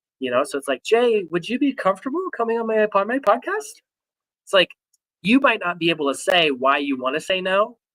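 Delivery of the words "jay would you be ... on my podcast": uneasy questioning lilt climbing up on podcast. Imitating someone uncomfortable asking a podcast guest: rising question inflection. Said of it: "the question inflection, where they get uncomfortable asking for a large ticket item. And so their voice naturally increases".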